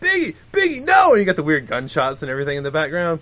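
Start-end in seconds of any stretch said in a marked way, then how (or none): 0.0-1.1 shrill, very high, loud yelling.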